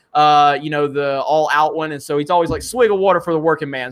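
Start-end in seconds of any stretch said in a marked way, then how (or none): none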